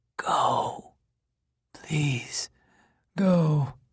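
faint, weak voice filled with dread. Moroni tells Kenny to leave, in a faint, terrible voice. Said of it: "in his faint and terrible voice".

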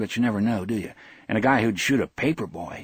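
plain

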